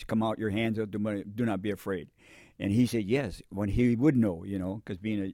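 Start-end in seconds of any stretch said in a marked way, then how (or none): none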